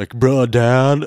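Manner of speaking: laid-back male Valley bro voice. Speaker tries a voice for a fifteen-year-old son: male Valley voice. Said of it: "male version of Valley voice".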